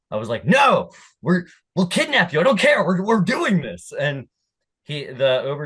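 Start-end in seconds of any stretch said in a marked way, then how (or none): 0.4-3.9 mock, high-pitched, yelled screaming. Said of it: "And I screamed".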